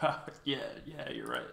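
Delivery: smug, self-satisfied, swooping condescending tone. Imitating Rogan agreeing with a guest: condescending and smug. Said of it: "this condescending, like, smug way".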